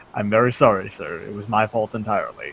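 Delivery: play-acted, very calm, composed, accepting tone. Speaker retells how a man answered being blamed over and over: retelling a calm apology. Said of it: "Bogdan very calmly goes".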